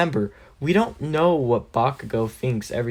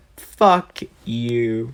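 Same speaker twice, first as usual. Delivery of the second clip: furious, angry tone; 3 dB louder than usual. Voicing a character who curses at another character: angry. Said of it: "As she gets a very angry look on her face".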